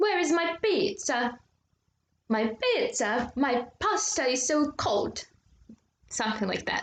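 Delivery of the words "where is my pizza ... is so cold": slow, put-on Italian accent. Demonstrating an accent for listeners to try, in an italian accent. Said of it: "So that was Italian accent".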